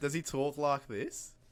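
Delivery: playful put-on Australian accent.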